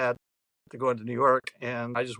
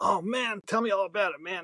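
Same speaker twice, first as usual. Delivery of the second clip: put-on high, drawn-out, excited young voice; 7 semitones higher than usual. Retelling a younger cab driver asking about Woodstock: imitating an excited cab driver. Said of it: "he was all excited".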